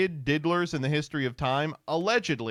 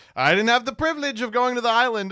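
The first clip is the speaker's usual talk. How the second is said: miffed, aggrieved, loud, pitched-up indignant voice; 9 semitones higher, 7 dB louder than usual. Mocking how the President answers a question about his past, imitating the President. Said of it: "He's like".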